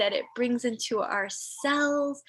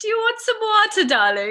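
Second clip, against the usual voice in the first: put-on raised, high British accent of an old woman; 9 semitones higher, 6 dB louder than usual. Speaker quoting their grandmother, imitating her British accent. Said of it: "my grandmother was also speaking in the British accent".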